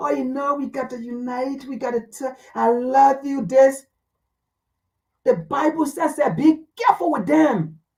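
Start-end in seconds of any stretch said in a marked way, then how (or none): 0.0-3.4 smooth-as-oil, slow, soft coaxing voice. Warning listeners about people who talk softly: imitating a slow soft voice. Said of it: "people who come to you with slow voice".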